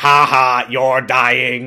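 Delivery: loud, booming, flat, slow, taunting delivery. Retelling how the Daleks answer over the intercom: loud Dalek voice. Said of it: "incredibly loud Dalek intercom are like".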